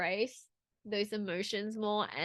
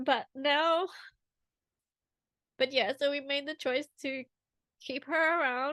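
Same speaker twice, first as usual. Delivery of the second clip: high tone, growing emotional mid-sentence; 5 semitones higher than usual. Talking about choosing to keep her sick pet around, getting emotional. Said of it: "So I'm getting emotional".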